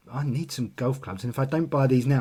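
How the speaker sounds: plain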